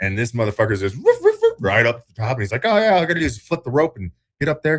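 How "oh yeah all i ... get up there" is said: crazy put-on rural Canadian drawl, pitched up. Retelling what a redneck man in a video says, in a crazy Canadian redneck drawl. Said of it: "crazy Canadian redneck drawl".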